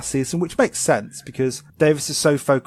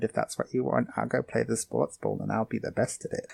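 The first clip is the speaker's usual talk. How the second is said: soft, really quiet, hushed under-the-breath voice; 8 dB quieter than usual. Voicing Ken from an anime during a Discord call, Ken's really quiet voice. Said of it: "He talks really quiet".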